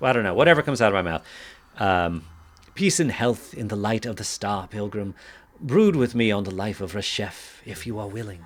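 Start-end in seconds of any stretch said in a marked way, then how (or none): 2.7-8.4 put-on courteous, polite tone in a British accent. The speaker voices the character Tzapor addressing a pilgrim, in a British accent. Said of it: "Tzapor should have a British accent".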